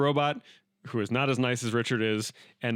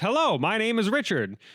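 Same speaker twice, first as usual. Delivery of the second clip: very high, loud, blaring forties ballgame announcer voice; 9 semitones higher than usual. Imitating how the character was voiced at the table: loud 1940s baseball commentator voice. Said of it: "the original voice at the table was talking like this".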